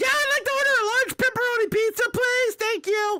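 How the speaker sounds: fake high-pitched voice. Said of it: "they take your voice and they pitch it up".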